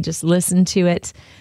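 normal talking voice

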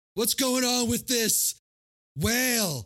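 very high, slow, drawn-out line reading. Retelling a movie scene, imitating the stepdad's line delivery. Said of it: "the fucking delivery of it".

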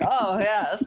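put-on wealthy older lady voice, vowels stretched wide. Showing the voice a character uses, imitating wealthy older wide vowels. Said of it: "those wealthy older wide vowels".

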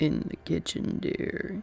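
low, deep, crackling whispered voice. Reading a story where a voice answers Maggie from the kitchen: deep, crackly voice. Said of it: "said a deep, crackly voice".

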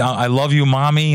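ordinary delivery

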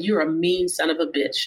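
ordinary talk

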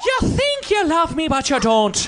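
put-on Irish accent. Challenged to give an accent, the speaker does an Irish accent.

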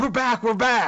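rushed, high, hurried, panicked speech. Mocking how the other speaker announces they're back, imitating a hurried, panicked voice. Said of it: "like in a hurried voice, like a panicked voice".

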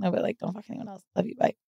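very soft mumbled voice.

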